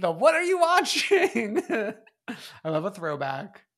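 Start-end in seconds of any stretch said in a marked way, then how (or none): 0.1-1.6 high, slow, stretched-out, laughing mock delivery. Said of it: "keeping up the bit with P K".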